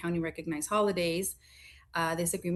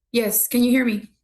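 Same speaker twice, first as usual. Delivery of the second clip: very loud, high-pitched shouting; 6 semitones higher, 12 dB louder than usual. A judge joining a council meeting on the line checks he is heard: yelling. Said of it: "you're yelling".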